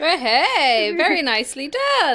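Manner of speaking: talking through laughter. Teasing another speaker after a stumbled read, laughing while talking. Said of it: "What are you laughing at?".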